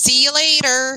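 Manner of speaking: put-on sounding like a Southern girl. Signing off to the others with a goodbye: sounding like a southern girl. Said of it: "Now you sound like a fucking Southern girl".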